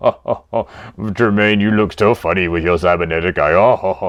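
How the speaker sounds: chuckling all the way through, teasing laugh. Describing what the character does not do: Darth Vader chuckling. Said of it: "He didn't chuckle and go".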